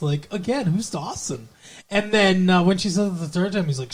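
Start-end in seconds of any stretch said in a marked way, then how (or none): 0.7-1.5 mock-innocent, weird voice, quieter. Describing a man repeatedly asking who Dawson is, mock-innocent weird voice. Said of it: "he says it so like innocently".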